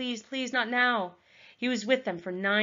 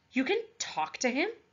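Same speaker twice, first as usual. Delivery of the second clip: gasping out the words, higher; 4 semitones higher than usual. A narrator reads a character's question after the wolf apologizes, gasped. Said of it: "Wren gasped".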